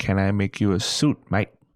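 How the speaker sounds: ordinary talk, nothing marked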